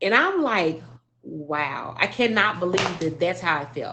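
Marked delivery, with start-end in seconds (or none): none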